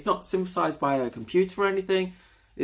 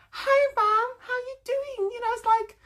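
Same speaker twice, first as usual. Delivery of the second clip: put-on girly voice, very high, very drawn out. Wondering if cute-voiced people always talk that way, the speaker mimics one: mocking high cute girly voice. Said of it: "that kind of voice must be kind of irritating".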